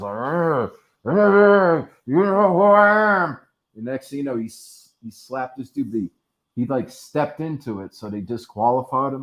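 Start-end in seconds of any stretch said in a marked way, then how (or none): 0.1-3.4 shrill, very loud, high, drawn-out dog-like barking. Retelling how a slapped contestant talked like he was a dog: imitating a man talking like a dog. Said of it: "started talking like he was a dog".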